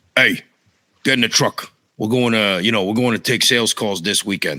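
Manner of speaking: put-on hard-nosed Brooklyn tough-guy voice. Speaker quotes his dad, a hard-nosed guy from Brooklyn: imitating hard-nosed Brooklyn dad. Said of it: "kind of like hard nosed guy from Brooklyn".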